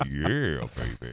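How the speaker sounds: put-on deep voice. Acting out a girl's imagined reply to a police chief, in a mock deep voice. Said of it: "That deep voice sounded a lot like".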